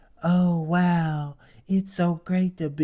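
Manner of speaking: high, slow, babyish put-on little voice. Retelling how she spoke up there: mock baby voice. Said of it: "in her baby bop voice".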